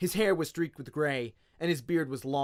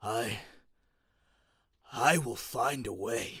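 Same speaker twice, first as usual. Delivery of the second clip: put-on croaking old man's voice; 4 semitones lower, 4 dB quieter than usual. Held up between two others, the old man croaks his line. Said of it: "holding an old man between them ... the old man croaked".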